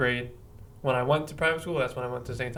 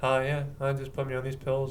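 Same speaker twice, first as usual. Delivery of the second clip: mock, flat, toneless monotone delivery. Imitating how a man on pills talked, imitating a flat monotone. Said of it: "he was very monotone, like this".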